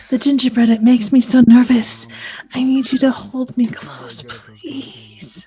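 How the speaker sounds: put-on seductive whisper. Mocking a movie character's lines: breathy sultry ASMR voice. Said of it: "Pornographic A S M R right there".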